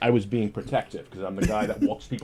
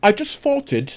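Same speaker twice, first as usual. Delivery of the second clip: very high, put-on British accent; 11 semitones higher, 4 dB louder than usual. Retelling what a woman said to him, doing her words in a british accent. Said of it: "in British in British accent, she goes".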